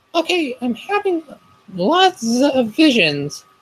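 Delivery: anxious, fretting, very high-pitched voice. The narrator voices her own line in class, in a worried voice. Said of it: "in a worried voice".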